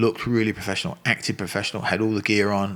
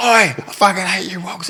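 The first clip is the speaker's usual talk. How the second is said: very high, raised, drawn-out yell; 11 semitones higher, 7 dB louder than usual. Retelling a fighter's outburst in a change room, imitating someone shouting. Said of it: "And he's shouting in the change room".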